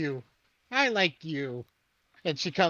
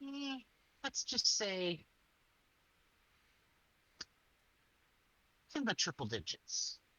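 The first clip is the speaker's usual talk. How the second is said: very quiet, hushed, confiding whisper; 5 semitones higher, 12 dB quieter than usual. Retelling how she leaned over and whispered only to Iris: whispering. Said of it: "She whispers directly to Iris".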